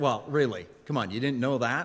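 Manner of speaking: snorting, dismissive, condescending tone. Illustrating a condescending habit during conversation, condescending with a little snort. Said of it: "you give a little snort as you share".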